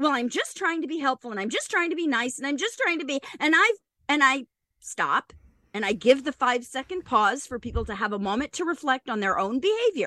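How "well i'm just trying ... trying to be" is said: plain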